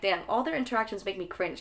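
ordinary talk

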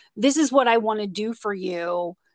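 ordinary talk

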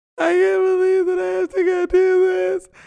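put-on very high, loud, acted-out drunken sobbing. Retelling ironing an apron while drunk, retelling drunk sobbing. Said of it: "I'm like sobbing".

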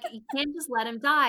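high-pitched screaming. Retelling what the judge said to Jeff: imitating someone screaming. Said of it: "The judge is screaming at him".

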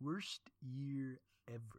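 soft, murmured, nasal nerd voice. Mocking what everybody says about the past year, in Comic Book Guy voice. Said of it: "in the Simpsons comic book guy voice".

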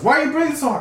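high, squeaky, mock angry, indignant tone.

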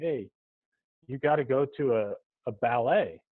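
ordinary delivery

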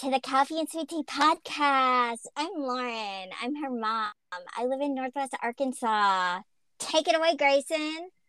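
squeaky voice pushed very high as if by helium. Opening a podcast episode with introductions, in a helium voice. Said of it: "Do you have a helium in your mouth?".

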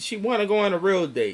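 ordinary talk, nothing marked

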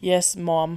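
put-on British accent, ma'am sounding like mom. Retelling a character from a UK show: imitating a British man saying ma'am. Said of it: "mimic how he said it".

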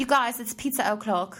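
bad Australian accent slipping into British. Speaker quotes an Australian performer she admires, in a bad Australian accent. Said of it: "I do a terrible Australian accent".

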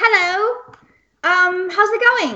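put-on British accent. Co-host greeting listeners at the start of the show, put-on British accent. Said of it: "I'm going to use my British accent".

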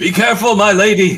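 slightly too loud. Calling out in character as a companion touches a door: a little too loud. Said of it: "just a little bit too loud, go".

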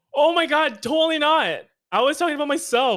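high, loud, outraged and indignant.

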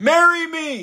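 very high, loud holler at full volume. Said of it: "At the top of my lungs, I hollered".

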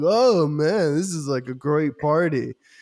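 very slow, drawn-out fake drunk drawl. Retelling a movie scene where a character pretends to be drunk: imitating Bruce Wayne faking drunk. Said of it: "he just starts pretending he's drunk".

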